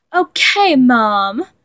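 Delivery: cocky, cocksure tone. He answers after being told not to stay up too late: cocky tone. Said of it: "Roman responded in a cocky tone".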